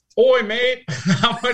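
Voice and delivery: terrible, butchered put-on Australian accent. Reading out a question from an australian, in a bad australian accent. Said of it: "He's from Australia".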